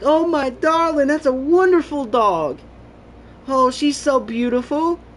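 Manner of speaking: very high-pitched, loud, doting talk. Imitating people who talk to a dog, high-pitched voice. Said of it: "they start like getting that high pitched voice".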